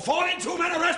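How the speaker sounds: barked high and loud, forceful.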